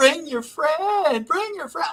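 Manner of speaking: mock women's screaming. Retelling women calling a friend over from across the street: imitating women screaming. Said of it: "they start screaming".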